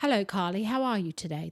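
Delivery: put-on English male voice-assistant accent. Showing how the app's chosen voice talks to its user, imitating an english male app voice. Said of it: "That's how it talks to me".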